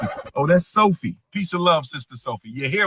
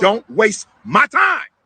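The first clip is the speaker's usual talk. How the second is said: high, loud yelling; 8 semitones higher, 7 dB louder than usual. Answering another speaker about not attending school: yelling. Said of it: "Why are you yelling?".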